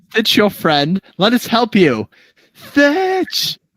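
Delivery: scared, high-pitched calling voice. Running a game, the speaker voices figures calling out to a character, in a more scared voice. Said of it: "a little bit with a more scared voice".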